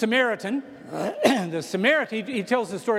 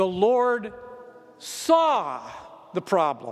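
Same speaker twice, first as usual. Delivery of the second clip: saw heavily stressed, rest plain; 3 semitones lower than usual. Emphasizing the third word of a passage's sentence: stress on saw. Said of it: "I'm going to emphasize the third word you said".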